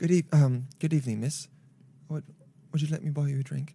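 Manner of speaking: put-on posh upper-class British accent. Trying out British accents with others, posh British accent. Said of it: "Posh British".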